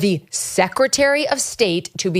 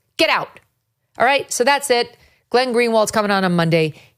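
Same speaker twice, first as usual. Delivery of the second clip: normal talking voice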